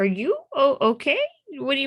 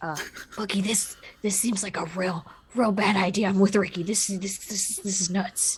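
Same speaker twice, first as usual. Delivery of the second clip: hushed whisper under the breath; 6 dB quieter than usual. In a tabletop game, whispering to a companion while the other one is distracted. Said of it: "I'm just gonna whisper".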